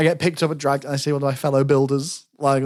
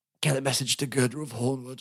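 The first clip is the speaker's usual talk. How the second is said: put-on dying splutter, much quieter; 7 dB quieter than usual. Retelling pulling her close and giving a dying message: mock dying splutter. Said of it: "Fucking spluttering".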